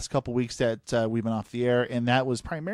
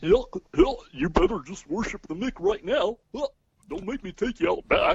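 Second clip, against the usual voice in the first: pitch rises high and bounces up and down; 7 semitones higher than usual. Asked by another speaker to do the voice: Goofy voice. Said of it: "go ahead and do your Goofy voice".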